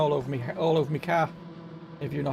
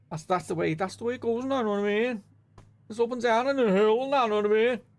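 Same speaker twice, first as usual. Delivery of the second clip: put-on, pitched-up Scouse accent; 5 semitones higher than usual. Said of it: "That's what Scousers do".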